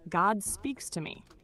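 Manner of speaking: plain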